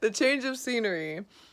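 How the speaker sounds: sudden, loud, high-pitched burst of a yell. Speaker corrects a spoonerism mid-conversation, shouting. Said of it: "I'm shouting, I'm sorry".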